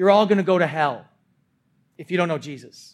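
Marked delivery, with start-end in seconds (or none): none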